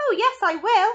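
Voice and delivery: tiny squeak, shrill, very loud and very high. Reading a story aloud, Mike Teavee answers his parents, tiny squeaky voice. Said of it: "squeaked a tiny voice".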